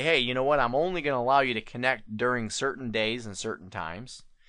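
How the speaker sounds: plain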